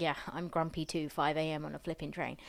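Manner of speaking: ordinary delivery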